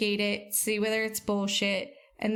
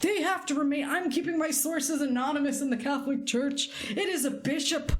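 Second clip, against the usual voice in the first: put-on New England accent, pitched up; 5 semitones higher than usual. Retelling Ed answering a skeptic on a show: imitating Ed Warren's New England accent. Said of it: "He has that New England accent".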